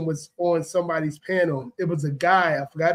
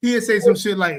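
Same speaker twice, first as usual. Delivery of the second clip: plain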